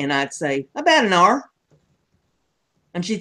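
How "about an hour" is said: put-on Kentucky accent, higher pitch. Retelling a childhood answer to Mom: Granny's Kentucky accent. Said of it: "I was saying everything just like Granny did".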